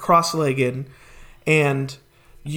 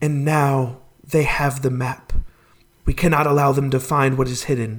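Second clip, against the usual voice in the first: hushed, whispered voice; 2 semitones lower than usual. Voicing one of three beings heard in a vision: whispering. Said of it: "they're whispering".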